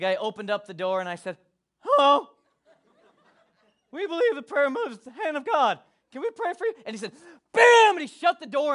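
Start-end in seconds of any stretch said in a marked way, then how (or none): 1.8-6.7 put-on high, young prepubescent pre-teen kid voice. Retelling knocking on a stranger's door offering prayer, in a prepubescent voice. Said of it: "in my prepubescent voice".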